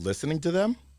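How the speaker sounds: high, upturned, rising echoing intonation. Showing the trick of repeating someone's last words: rising high pitch question. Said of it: "repeat the last three words they said with a high pitch".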